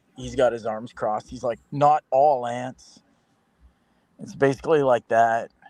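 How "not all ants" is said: smug, self-satisfied, dismissive tone. Describing a cartoon, the speaker voices the smug guy's reply: mock-smug. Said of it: "there's this smug guy".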